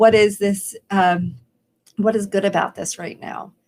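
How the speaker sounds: plain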